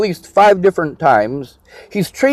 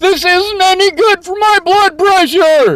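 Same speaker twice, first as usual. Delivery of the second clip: very high-pitched screeching, shrieking complaint; 11 semitones higher than usual. Recounting a power struggle, speaker acts out what Diane screamed: imitating Diane screaming. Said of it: "she screams at the top of her lungs".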